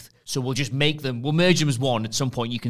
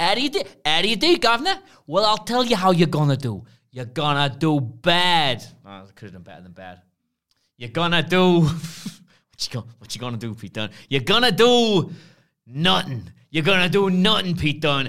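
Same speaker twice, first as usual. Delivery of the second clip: put-on Italian-American accent, wrestler voice, much higher; 5 semitones higher, 4 dB louder than usual. Taunting an opponent from England on camera, Italian-American voice doing Brum. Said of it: "It's got to be Italian-American doing Brum".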